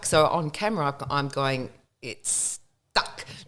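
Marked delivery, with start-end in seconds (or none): 2.0-3.2 barely voiced sideways whisper under the breath. Retelling a live weather report when the auto cue got stuck: imitating saying it under my breath.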